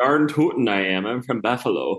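Upper Midwest way of talking. Retelling the answer to someone asking where they're from, in a Minnesota accent. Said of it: "What a good Buffalo, Minnesota accent".

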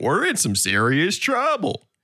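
silly cartoon voice. Someone asks for talking like Goofy; answering in a Goofy voice. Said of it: "I want him to talk like Goofy".

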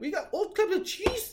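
put-on Minnesota accent, very high. Retelling what people on a shuttle from Wisconsin said, in a Minnesota accent. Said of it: "like that Minnesota accent".

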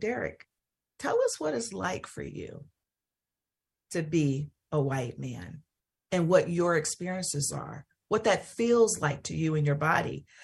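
soft and gentle. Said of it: "Jose very gently said".

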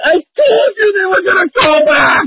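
very high, crying shout. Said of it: "they're yelling at their wives like".

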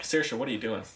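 plain

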